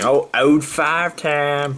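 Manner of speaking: clumsy put-on Southern drawl. Naming people during shout-outs, attempting a bad Southern accent. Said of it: "another bad attempt at a Southern accent".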